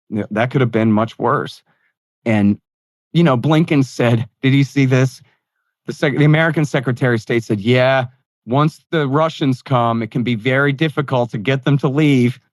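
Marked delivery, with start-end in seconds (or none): none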